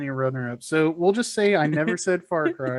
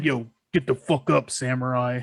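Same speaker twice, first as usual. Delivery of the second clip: put-on deep dude voice, much lower pitch; 5 semitones lower than usual. Describing grunge metal in the car, the speaker mimics some dude, deep metal-dude voice. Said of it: "Like some dude with a deep ass voice".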